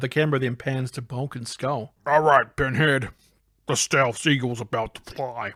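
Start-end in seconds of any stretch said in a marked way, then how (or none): 2.1-5.5 cool put-on character voice. Reading a scene aloud, voicing Bulk's line: Bulk voice, cooler than Bulk. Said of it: "He sounds cooler than Bulk actually sounds".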